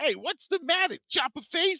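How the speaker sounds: put-on very high New York Brooklyn accent. Speaker quotes the rat character from a show, Rattrap's Brooklyn accent. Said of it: "that like N- New York Brooklyn accent".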